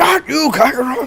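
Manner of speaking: very high-pitched, frustrated, exasperated voice. Retelling Vegeta getting frustrated with Goku; mock-frustrated Vegeta voice. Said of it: "Vegeta just getting really frustrated with Goku".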